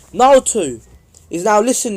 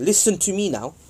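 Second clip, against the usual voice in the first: plain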